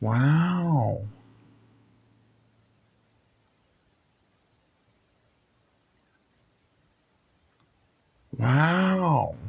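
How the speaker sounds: high wows, each stretched out slow. Doing an impression and asking for honest judgment: Owen Wilson impression. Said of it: "let's hear your Owen Wilson".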